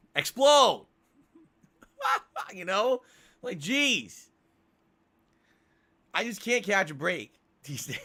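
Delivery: talking through laughter. Complaining that too much has gone wrong lately, laughing while talking. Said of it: "I can't even stop laughing".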